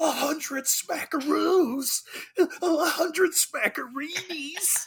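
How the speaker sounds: put-on exaggerated excitement. Retelling a character's excited reaction after a phone call: imitating excited overacting. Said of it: "Just beautifully overacting".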